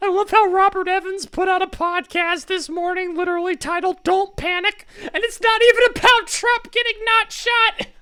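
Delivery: full cartoonish puppet voice, very high. The speaker comments on a podcast released this morning, slipping into a Muppet voice. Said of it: "I've gone full Muppet voice".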